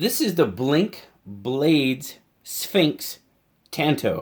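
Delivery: very slow, careful, deliberate, word-by-word delivery. Introducing a knife in a review video, its name said really slowly. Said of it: "I had to say that really slow".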